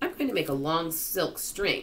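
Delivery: ordinary delivery, nothing marked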